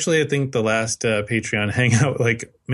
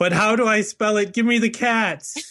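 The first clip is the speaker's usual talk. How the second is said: very high, loud shouted delivery; 11 semitones higher than usual. Reading out an all-caps tweet from a viewer: shouting an all-caps tweet. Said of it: "so that means I have to shout it".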